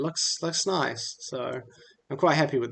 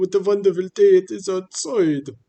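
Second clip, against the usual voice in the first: very loud, high, put-on Russian character voice; 6 semitones higher, 9 dB louder than usual. Replaying an old character clip, in a russian accent. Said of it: "My Russian voice".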